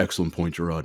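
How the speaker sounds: very low, quiet baritone. Retelling how he answered the speaker's comeback, Shaq impression. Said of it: "in typical Shaq fashion".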